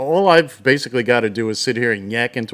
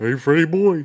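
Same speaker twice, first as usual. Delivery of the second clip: cartoon caveman voice, pitched a bit higher; 5 semitones higher than usual. Recalling a cab company instructor named Barney Rubble, doing his Barney Rubble voice. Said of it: "that's the same voice as Yogi Bear".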